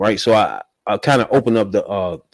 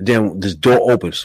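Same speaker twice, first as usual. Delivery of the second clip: usual speaking voice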